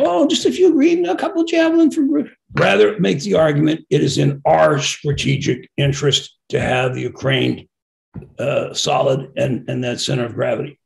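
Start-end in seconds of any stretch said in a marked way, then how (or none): 0.0-2.3 high-pitched mock begging. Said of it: "stop begging and saying".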